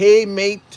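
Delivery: easy, relaxed put-on New Zealand accent. Explaining why the new zealand accent is the best: new zealand accent. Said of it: "why would you say New Zealand accent is the best?".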